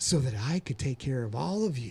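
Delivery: low, put-on radio announcer voice. Explaining why they got a journalism degree, in Casey Kasem voice. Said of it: "you do that in a Casey Kasem voice".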